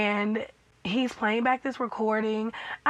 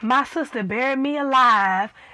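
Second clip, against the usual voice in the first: put-on exaggerated Southern accent, louder; 6 dB louder than usual. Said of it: "I wasn't hearing the Southern accent".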